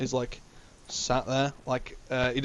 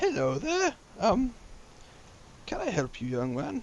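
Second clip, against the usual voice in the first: put-on high, sing-song old woman voice; 8 semitones higher than usual. Narrating a scene, speaker voices the woman who answers the door, elderly woman voice. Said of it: "an elderly woman comes to the door".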